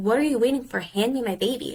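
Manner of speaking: imitated yell. Retelling demanding the doctor hand over the baby: retelling yelling at the doctor. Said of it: "And so I'm yelling at him".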